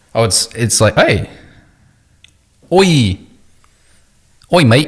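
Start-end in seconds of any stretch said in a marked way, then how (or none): 2.7-4.9 mock Australian accent, much higher and louder. Putting on a gift from the other speaker, in a mock Australian accent. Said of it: "I don't know why I'm talking".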